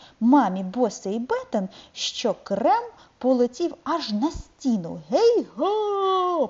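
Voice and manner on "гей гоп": hollered, very high and long drawn-out call. Narrator reads Carlson waving at the family; calling out. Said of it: "гукнув він".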